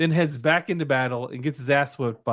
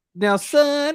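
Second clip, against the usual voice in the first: very high, slow, drawn-out country drawl; 14 semitones higher, 4 dB louder than usual. Retelling how she said a line: imitating drawn-out accent. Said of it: "she had that really, like, uh, drawn out accent".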